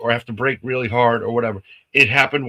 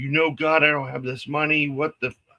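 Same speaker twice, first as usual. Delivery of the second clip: mock, frustrated, exasperated cursing outburst, screamed; 2 semitones higher, 6 dB quieter than usual. Retelling a money problem with the car: retelling a scream. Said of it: "I'm screaming".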